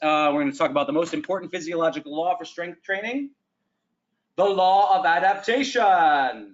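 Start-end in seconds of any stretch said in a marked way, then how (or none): 4.4-6.3 grand, theatrical, dramatic emphasis. Lecturing on strength training, introducing an important law in a dramatic voice. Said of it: "I say it with a dramatic voice".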